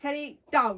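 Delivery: loud firm voice. Told to command Teddy, giving the order firm but fair. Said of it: "Say it in a firm but fair voice".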